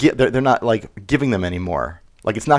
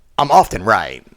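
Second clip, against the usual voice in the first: acted, stuck-up, snotty voice; 2 semitones lower than usual. Quoting another speaker's old clip: imitating a snotty voice. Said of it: "in a real snotty voice".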